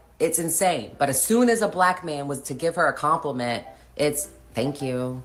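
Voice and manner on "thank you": mock curt delivery with attitude. Retelling how a woman answers a compliment: imitating a thank you with attitude. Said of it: "with an attitude".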